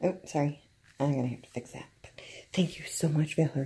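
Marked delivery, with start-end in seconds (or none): 1.0-3.7 hushed whisper, much quieter. Trying not to wake someone up while giving thanks, whispering. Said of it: "sorry for the whispering".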